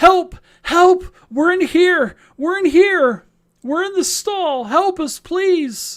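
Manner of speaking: very high, loud whimpering cry. Game master voicing trapped people calling from a stall, whimpering cry for help. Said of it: "you can start to hear this whimpering".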